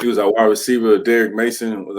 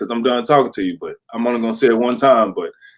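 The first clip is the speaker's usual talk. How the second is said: usual speaking voice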